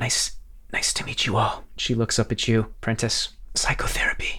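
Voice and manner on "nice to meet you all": breathy, hushed, soft whisper. Narrating a character who bows slightly and greets the group, whispering.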